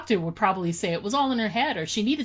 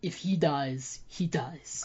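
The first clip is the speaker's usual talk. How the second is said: very slow, deliberate fighter voice, every word drawn out; 5 semitones lower, 6 dB quieter than usual. Reading a recap line as Dolph Lundgren's Drago: Dolph Lundgren impression. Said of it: "That was my best Dolph Lundgren".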